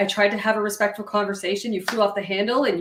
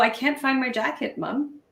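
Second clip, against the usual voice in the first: even, calm, composed, collected voice; 4 semitones higher than usual. A mother describing her hot buttons imitates her child asking for help, imitating a calm, collected voice. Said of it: "in a very calm, collected voice".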